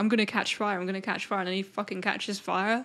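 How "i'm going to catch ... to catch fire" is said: normal talking voice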